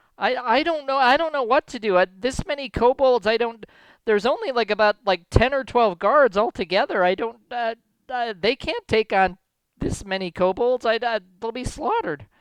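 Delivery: terrified, high, stumbling panic. The game master voicing the mayor answering the players, terrified frightened voice. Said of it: "the mayor seems to be terrified and has the hiccups".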